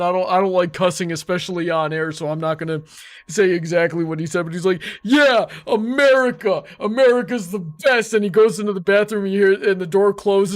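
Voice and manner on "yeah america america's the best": mock tipsy drunk drawl, slow and pitched up. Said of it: "visibly drunk that he can't even really stand".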